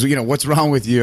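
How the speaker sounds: put-on Bulgarian-accented speech. Retelling what a coach asked the speaker on a hard day, Bulgarian accent. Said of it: "in his Bulgarian accent".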